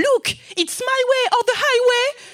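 very high, worked-up, riled-up French accent. Describing how they sound speaking English when annoyed, French accent, very high voice. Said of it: "avec un accent français et d'une voix très aiguë".

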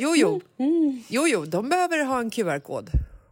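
insistent, official-sounding delivery.

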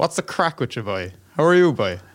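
Irish English accent. Switching from german to show an irish english accent. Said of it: "wenn ich eben einen richtig englischen Akzent, also irischen englischen Akzent reden soll".

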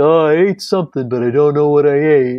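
dim-witted, clueless, bewildered dopey cartoon voice. Explaining bacteria hiding inside cells, the speaker does an impression of a stupid phagocyte. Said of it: "that's my impression of a stupid phagocyte".

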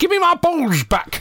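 put-on very high, shouting old man voice. Showing what he shouts while playing with a broom, in an old man's voice. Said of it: "And I shout".

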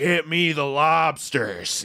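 insane-sounding, very drawn-out voice. Showing others your favorite performance of his, do the insane Jack Nicholson voice from The Departed. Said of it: "it's an insane voice".

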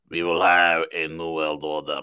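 speech bent by a put-on German accent. Showing how Henry Kissinger sounds, Henry Kissinger impression. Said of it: "He sounds like this. This is Henry Kissinger".

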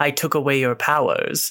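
slow, weird, odd, drawn-out character voice. Retelling a movie scene where a character speaks: Wesker voice. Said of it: "I like your Wesker voice".

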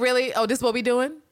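put-on skeptical tone. Retelling a TV character's reaction: imitating Villanelle's sarcastic disbelief. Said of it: ""Yeah, right, bitch" look on her face".

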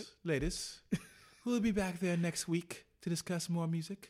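put-on English accent all the way through. Closing out the episode for listeners; english accent. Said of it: "my English accents".

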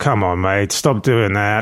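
put-on, slow, cocky, swaggering voice full of bravado. Retelling what he said while having his hair gelled: imitating his bravado. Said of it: "he still had bravado".

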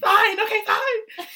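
very loud, very high-pitched shout. Recounting a man on the highway, retelling a shout. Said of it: "why are you both screaming at each other?".

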